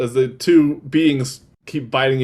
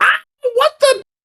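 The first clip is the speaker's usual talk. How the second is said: shrieking kobold voice, higher and louder; 5 dB louder than usual. Voicing a kobold who wakes up as a player bites him: kobold screaming. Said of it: "He screams".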